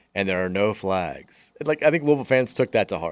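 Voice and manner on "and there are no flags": mock disheartened announcer voice, slow and disappointed. Retelling an announcer's no-flags call on a long run: imitating Andre Ware sounding disappointed. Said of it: "he sounded so disappointed when he was like".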